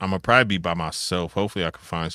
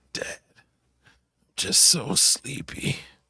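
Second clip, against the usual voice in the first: put-on small, raspy, sleepy kid's voice, slow; 8 semitones higher than usual. Retelling his kid waking up early: imitating Cole's little raspy voice. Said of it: "his little raspy voice".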